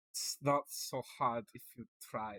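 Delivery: whispered, hushed attempt at a Dutch accent. Coaxing the other person on stream to try it, in an attempted Dutch accent. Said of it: "A Dutch accent?".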